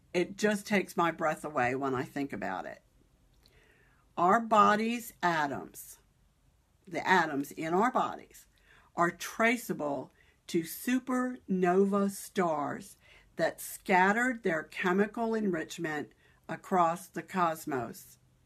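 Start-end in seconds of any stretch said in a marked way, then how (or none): 4.1-18.1 slow, careful, deliberate, unhurried reading aloud. Read out the words of a brilliant man who fascinates you, reading slowly to avoid mistakes. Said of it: "I'm going to read it slowly".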